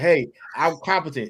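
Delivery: ordinary delivery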